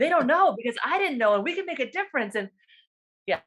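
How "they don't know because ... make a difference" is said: mock fired-up, eager, animated, pitched up. Retelling telling hospital colleagues what they were missing: imitating own excited past self. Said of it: "I'm just animated and I'm excited".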